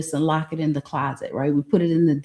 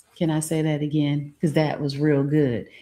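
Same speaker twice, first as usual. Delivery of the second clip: plain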